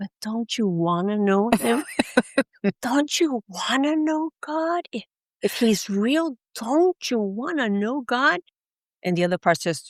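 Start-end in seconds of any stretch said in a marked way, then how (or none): 0.0-8.4 small, slow, drawn-out inner voice. Recalling one side of their inner struggle, in a little soft voice. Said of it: "that little soft voice would say".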